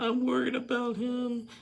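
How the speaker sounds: very high put-on weepy voice, fake crying. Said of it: "does her little crocodile tears".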